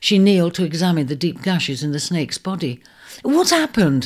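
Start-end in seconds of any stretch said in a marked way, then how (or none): 3.2-4.0 high, urgent crying out. Seeing the eagle clutching the injured snake, she kneels and cries out. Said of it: "she cried".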